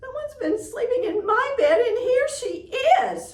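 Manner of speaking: small, squeaky, very high, loud voice. Reading the Goldilocks story, the narrator voices Baby Bear: squeaky little voice. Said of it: "At the sound of Baby Bear's squeaky little voice".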